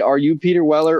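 ordinary delivery

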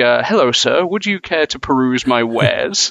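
put-on, exaggerated overly polite tone. Describing a game's arms dealer in the Spanish version, mock overly polite. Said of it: "talks to you in the most polite form".

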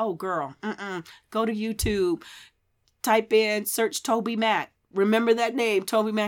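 usual speaking voice

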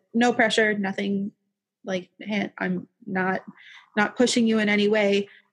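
ordinary delivery

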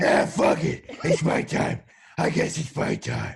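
gruff, rough-edged, ground-out voice. Acting out Batman accepting his fate: Batman voice. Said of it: "Batman would just be like".

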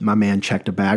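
plain

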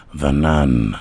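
very deep, muffled, throaty horror-trailer narrator voice. Describing a favorite horror-trailer voice guy, do his throaty narrator voice. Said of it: "he's very throaty, he goes".

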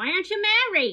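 put-on accent with Yiddish inflection.

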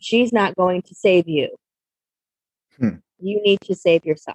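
imitated calm, even voice. Retelling what a voice told them, imitating a calm voice. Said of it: "And it said very calmly".

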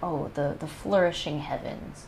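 ordinary talk

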